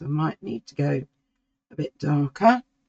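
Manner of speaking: croaky voice that catches. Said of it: "she says with a croaky voice".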